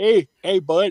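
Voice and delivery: put-on Canadian accent in a comic-hero voice. Discussing how Wolverine sounded in the TV show, Canadian-accent Wolverine voice. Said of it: "supposed to sound Canadian".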